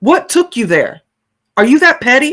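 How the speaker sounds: heated tone. Reacting to what another person did: really angry. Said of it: "it's making me really angry right now".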